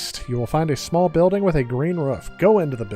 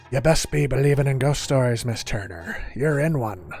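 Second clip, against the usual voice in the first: bad, put-on pirate accent. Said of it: "I know that's a terrible, uh, accent of it".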